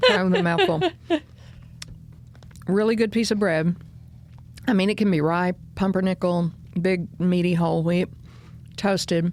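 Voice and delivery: muffled speech while chewing, mouth full. Describing a favorite breakfast to the other speaker while eating: talking with mouth full. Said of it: "Pardon me for eating, my, eating with my mouth full".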